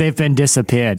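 put-on movie villain accent. After being asked whether the accent was German or Russian, Bond villain accent. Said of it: "It was Bond villain".

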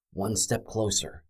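quiet whisper. Semenex, waiting at the cell door for the guard, whispered. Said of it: "he whispered".

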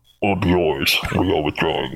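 low, muffled alien voice. Asked how the alien would sound, speaker demonstrates a deep, muffled Batarian voice. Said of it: "Probably in a deep, muffled voice".

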